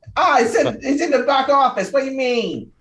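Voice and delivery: very high, loud, shrill, bad grown-up New York accent. Voicing a child who answers where Taddy is: thirty-five-year-old New Yorker accent. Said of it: "this child's gonna sound like a thirty-five-year-old New Yorker".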